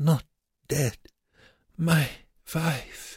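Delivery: faint, slow half-whisper, pitched very high. The Musselmann groans and answers Wernicke, half-whispered. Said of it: "and whispered".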